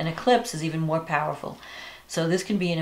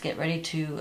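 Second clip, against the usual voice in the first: normal talking voice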